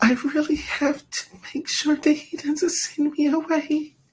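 very high-pitched, irksome, irritating little voice. Mocking an irritating woman to the others: imitating the irritating woman. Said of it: "That's exactly what she sounds like".

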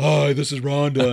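mock deep fake female voice. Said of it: "like a guy trying to be a girl".

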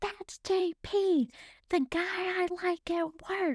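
play-acted very slow, drawn-out, high yell. Retelling shouting back to mom over the leaf blower: imitating own past shouting. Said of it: "we're screaming over the leaf blower".

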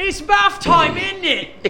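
very high, loud, drawn-out put-on British scream. Showing the go-to accent used at bath time; screaming in a British accent. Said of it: "I'll just scream at Lennon in a British accent".

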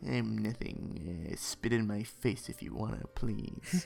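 put-on action-film tough-guy movie-star voice. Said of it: "try and perfect my Charles Bronson voice".

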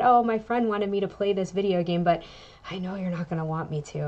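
plain

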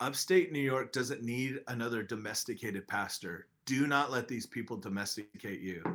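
mock whisper. Speaker retells what a man whispered in his ear, imitating a whisper. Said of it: "he whispers in your ear".

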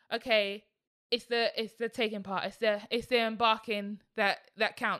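ordinary talk

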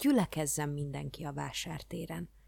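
ordinary delivery

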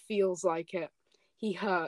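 ordinary delivery

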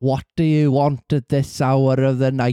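attempted North Welsh accent. Trying out a north welsh accent after calling it fascinating to listen to. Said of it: "I'll try this North Welsh thing".

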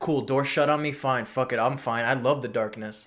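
ordinary talk

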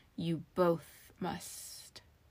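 hissing delivery. Narrator reading a magic mirror's reply to two people, hissing. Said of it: "the mirror hissed".

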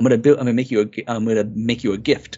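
put-on creepy smiling voice. Retelling the alternate ending, quoting Isaac: Isaac creepy smiling voice. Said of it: "again, creepily smiling".

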